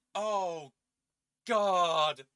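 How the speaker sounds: put-on distant yell. Describing a sound heard from the bathroom after the door closes, retelling a distant yell. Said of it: "I have no idea how distant that yelling was".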